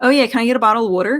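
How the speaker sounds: put-on own everyday Philadelphia accent, casual tone. Retelling ordering at a Dodgers game: imitating own Philadelphia accent. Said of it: "let me get my accent straightened out".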